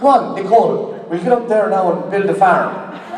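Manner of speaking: mock bad Irish accent.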